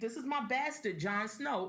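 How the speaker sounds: ordinary delivery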